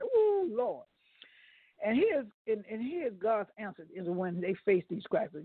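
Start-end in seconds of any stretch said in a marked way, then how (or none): 0.0-0.8 mock whining moan, pitched very high. Retelling how the people complained to Moses: imitating Israelites whining. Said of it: "they start whining".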